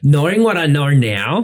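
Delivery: put-on Australian accent. Answering a question about the first post, australian accent. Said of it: "I love saying that in an Australian accent".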